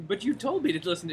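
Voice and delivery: high, loud, eager voice.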